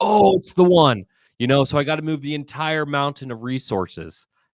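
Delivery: high, loud, gushing excited overreaction. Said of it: "people just get really excited".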